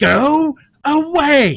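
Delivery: piercing, shrill snarl-shriek at full volume. A narrator voices a character pulling herself out of melancholy: snarling scream. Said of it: "She snarls and seems to pull herself out of it for a moment and screams".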